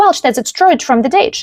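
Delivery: plain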